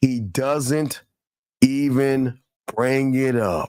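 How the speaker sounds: very slow, deliberate reading, word by word. Stopping someone to read a message aloud, reading really slowly. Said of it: "I'm gonna read this really slow".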